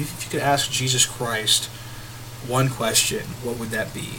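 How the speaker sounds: ordinary talk, nothing marked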